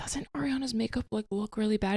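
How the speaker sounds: soft, hushed half-whisper under the breath. Retelling a remark to mom during a movie: retelling a half-whisper. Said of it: "whispering to her".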